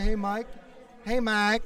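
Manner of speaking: put-on slow Southern US accent. Recalling how Roy phoned during the album recording, imitating Roy's Southern gentleman accent. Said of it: "in his Southern gentleman accent".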